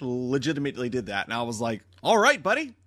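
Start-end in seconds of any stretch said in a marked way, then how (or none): 2.0-2.7 put-on sudden, very high-pitched, loud Australian accent. Retelling own reply to a ticket taker: imitating own Australian accent. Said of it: "Why did I turn Australian all of a sudden?".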